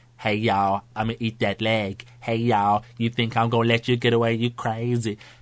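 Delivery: put-on cartoon monster voice. Retelling how friends randomly quote a cartoon: Cleveland voice. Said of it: "it's the voice of Cleveland".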